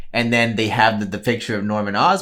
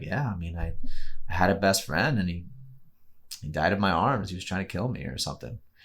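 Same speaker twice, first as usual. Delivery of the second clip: soft, totally deadpan delivery; 3 semitones lower, 7 dB quieter than usual. Describing a movie scene where Ned asks different Peters, as Tobey Maguire's Peter, mock-deadpan. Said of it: "Toby Maguire's Peter being so deadpan".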